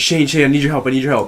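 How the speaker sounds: play-acted alarmed, urgent and frantic voice. Retelling a friend running over asking for help: imitating an urgent emergency plea. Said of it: "Made it sound like an emergency".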